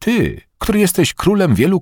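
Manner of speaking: powerful, forceful, very high-pitched delivery. The narrator addresses Aziru, speaking forcefully. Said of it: "rzekłem z mocą".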